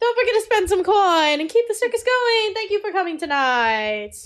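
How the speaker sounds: loud circus showman announcer pitch. Describing a circus scene, the storyteller voices a man addressing the audience: voicing the circus announcement. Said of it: "And he goes".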